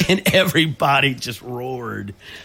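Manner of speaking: usual speaking voice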